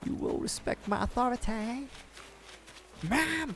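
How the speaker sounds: whispered, breathy, hushed character voice. Quoting a cartoon while recalling a show: Cartman voice. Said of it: "that's the Cartman voice".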